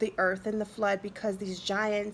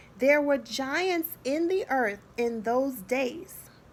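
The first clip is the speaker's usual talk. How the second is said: unhurried, careful, deliberate reading aloud; 5 semitones higher, 3 dB louder than usual. Reading a key verse aloud, asking listeners to pay attention: slow reading. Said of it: "I'm going to read it slowly".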